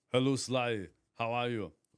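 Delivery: friendly celebrity voice impression. Doing a requested dialogue impression: Arnold Schwarzenegger voice. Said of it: "I can do Arnold Schwarzenegger probably talking to".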